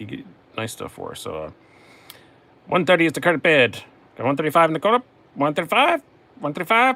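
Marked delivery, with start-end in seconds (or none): 2.7-7.0 loud, high auctioneer bid calling. Calling out the bids in an auctioneer voice. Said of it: "I just like doing that voice".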